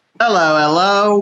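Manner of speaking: put-on, tried-on Australian accent. Asked to show the accent picked up in Australia, Australian accent. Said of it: "Let's hear it".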